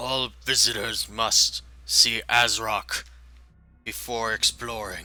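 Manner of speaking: loud, broken, halting Common speech. Voicing a goblin who speaks to the party: speaking broken Common. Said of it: "in sort of broken common".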